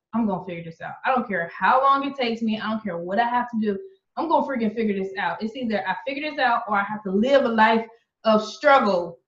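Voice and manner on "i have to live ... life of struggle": ordinary talk, nothing marked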